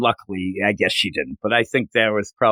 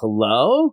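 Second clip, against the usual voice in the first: mock guarded, wary, suspicious tone. Retelling a lady stopping to greet him at night: imitating a suspicious hello. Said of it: "it was almost like, "Can I help you?"".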